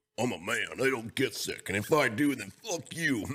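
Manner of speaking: deliberately poor, bad, mocking put-on voice. Imitating a friend who is present, a mocking impression of a friend. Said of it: "That's the worst impression I've ever seen".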